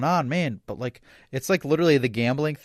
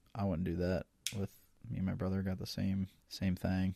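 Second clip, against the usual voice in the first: barely audible, sheepish half-whisper; 5 semitones lower, 12 dB quieter than usual. Talking about getting matching tattoos with a brother: half-whispering very quietly. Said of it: "whispering so fucking quietly".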